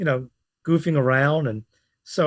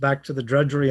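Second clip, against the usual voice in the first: plain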